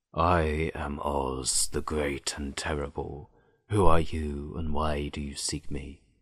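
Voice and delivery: deep, hushed, very low, quiet voice. Reading the story, voicing Oz from the ball of fire, in a low, quiet voice. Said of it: "a low, quiet voice came from the ball of fire".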